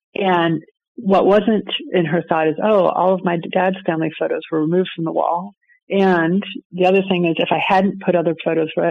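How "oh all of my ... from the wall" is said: usual speaking voice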